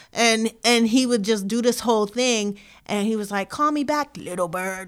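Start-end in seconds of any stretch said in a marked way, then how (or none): 3.4-4.8 deep put-on voice, dropped way down low. Retelling what a friend said to the speaker: imitating a deep voice. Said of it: "he did like a deep voice".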